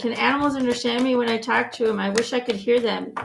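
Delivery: ordinary delivery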